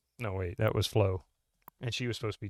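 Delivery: ordinary talk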